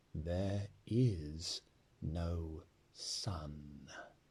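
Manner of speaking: soft and deep. Narrator reading a witch repeating her words to four listeners, softer, deeper voice. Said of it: "in a softer and deeper voice".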